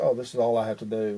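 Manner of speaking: ordinary talk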